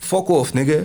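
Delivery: rudely dismissive voice. Showing a rude way to turn someone down, rude and dismissive. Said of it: "you could say it in a rude way".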